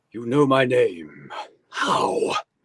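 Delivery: guarded, suspicious, wary tone. Asked to read the line as Lone Wolf: voicing Lone Wolf, asking warily. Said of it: "say that line for me again as Lone Wolf".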